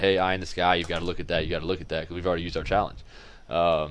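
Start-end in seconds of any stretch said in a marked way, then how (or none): none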